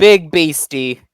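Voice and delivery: loud yelling, shouting. Role-play player's character calls out to a big beast, yelling. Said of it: "I'm just gonna yell".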